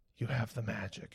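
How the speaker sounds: quiet, soft-spoken voice. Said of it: "She spoke very quietly".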